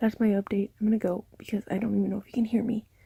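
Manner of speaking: speaking in a whisper. Speaker ending tonight's update while tired, whispering. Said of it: "I have to whisper".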